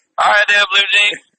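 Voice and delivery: high-pitched hollered call. Acting out a trucker in a restaurant calling to another: hollering across a restaurant. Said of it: "and he hollers".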